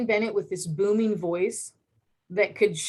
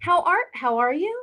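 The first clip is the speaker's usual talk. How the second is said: upward lilt climbing on "you"; 9 semitones higher than usual. Imitating how the Kardashians talk: Kardashian upward inflection. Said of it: "Upward inflection on every, uh, statement".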